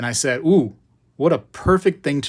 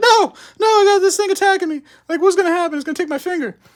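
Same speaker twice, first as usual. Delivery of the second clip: put-on very high, loud, wailing crying like a child; 4 dB louder than usual. Retelling a squirrel attack as a kid, imitating crying as a kid. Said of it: "Crying as a kid".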